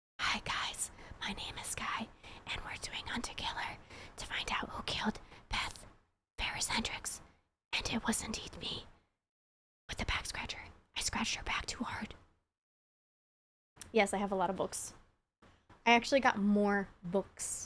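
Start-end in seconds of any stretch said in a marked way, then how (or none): 0.2-12.1 soft, hushed, library-quiet whisper. Answering a chat complaint about talking too loud in a library: whispering. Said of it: "Okay, I'll whisper".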